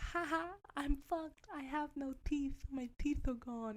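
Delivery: play-acted, high, drawn-out talking through laughter. Retelling what a woman said as she came over, imitating someone laughing. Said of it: "and she's like laughing".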